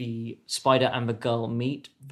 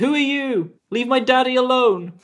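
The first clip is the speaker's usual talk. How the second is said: put-on young girl voice, very high, loud shout; 12 semitones higher, 7 dB louder than usual. Voicing a young girl shouting back at a stranger: girl shouting back. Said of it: "she shouts back".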